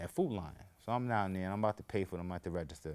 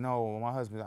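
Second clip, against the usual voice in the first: ordinary delivery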